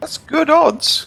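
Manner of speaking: squeak in the voice. Playing a game and counting up points, with a squeak in his voice. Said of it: "with a squeak in his voice".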